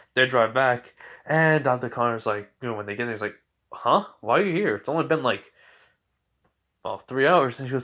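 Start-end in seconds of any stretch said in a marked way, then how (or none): none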